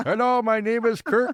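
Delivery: put-on Indian accent. Playing an imagined tech support worker in india answering: mock indian accent. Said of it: "tech support in India".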